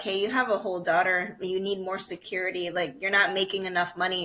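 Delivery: ordinary delivery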